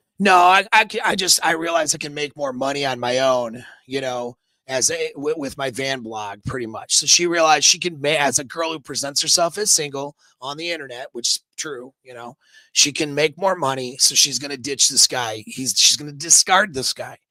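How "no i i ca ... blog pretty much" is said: normal talking voice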